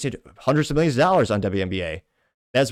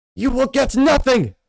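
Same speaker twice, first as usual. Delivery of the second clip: put-on very high, raised, German-sounding voice; 13 semitones higher, 5 dB louder than usual. Trying the meme's movie quote again: German-sounding Gene Wilder impression. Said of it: "that's probably more German".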